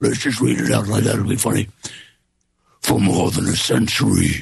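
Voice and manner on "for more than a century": put-on demon voice, much slower. Speaker reads a passage aloud as a joke, in a demon voice. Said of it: "Like a demon voice?".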